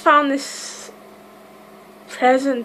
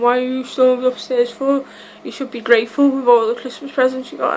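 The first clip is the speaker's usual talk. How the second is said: ordinary delivery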